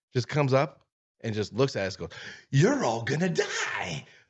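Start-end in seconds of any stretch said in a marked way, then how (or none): 2.5-4.0 slow, swooping, cracked-out, out-of-his-mind voice. Retelling a homeless man who walked up to the group, imitating a cracked-out man. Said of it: "cracked out of his mind".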